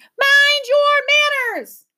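shrill, very high angry scream, "your" drawn out. Narrator reading the Wifflebird's line to the shrieking mob, screaming angrily. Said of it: "she screamed".

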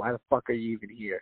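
put-on rude tone. Retelling a visit to a coffee shop where they were rude: imitating a rude coffee shop worker. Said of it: "that energy".

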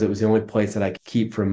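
ordinary talk

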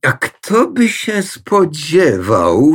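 slow voice full of disbelief, incredulous. A narrator reads the mother replying to Pani Pelagia; in disbelief. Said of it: "z niedowierzaniem stwierdziła mama".

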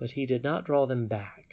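ordinary delivery

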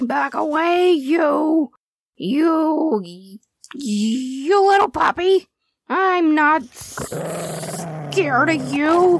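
very slow, fierce, drawn-out barking growl. A dog confronting a bigger growling dog, in his fiercest bark. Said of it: "Stretch said in the fiercest bark he could muster".

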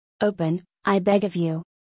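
ordinary delivery

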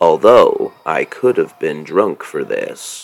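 bad, put-on wrestling play-by-play announcer voice. Calling wrestling moves, the speaker slips into a terrible Gordon Soley impression. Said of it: "That's a terrible impression".

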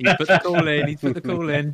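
high, loud, sneering, mocking jeer.

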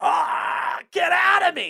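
very slow, very high, loud, creaky, drawn-out straining grunt. Asking whether he has ever screamed in the bathroom, acting out a straining grunt. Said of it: "That's a grunt".

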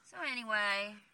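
ordinary talk, nothing marked

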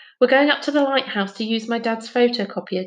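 ordinary talk

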